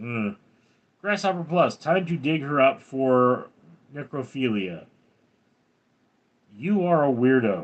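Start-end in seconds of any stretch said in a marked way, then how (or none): none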